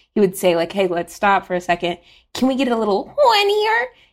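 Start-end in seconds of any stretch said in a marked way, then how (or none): 2.4-3.9 voice shooting way up, sing-song, coaxing. Retelling how Devin asked for more during recording: imitating Devin, pitch going up. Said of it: "he would always go up".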